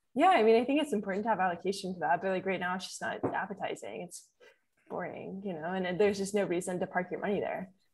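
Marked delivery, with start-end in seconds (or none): 2.8-5.4 very quiet, breathy, creaky vocal fry. Asked whether she'd buy bonds at 5% interest, answering with vocal fry. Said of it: "I loved the vocal fry".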